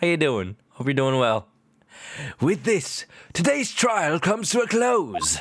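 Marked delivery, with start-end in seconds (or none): 2.4-5.4 terrible, clumsy, sing-song fake British accent. Speaker closes today's trial, in a terrible british accent. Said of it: "in time for me to do terrible British accents".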